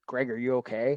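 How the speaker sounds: ordinary talk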